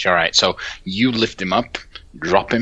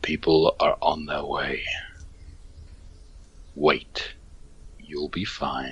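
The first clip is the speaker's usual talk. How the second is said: deep, throaty, hushed, distant-sounding speaking voice; 4 semitones lower, 6 dB quieter than usual. Game master voices a message heard through a sending stone: deep, throaty voice. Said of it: "you hear a deep, throaty voice just say".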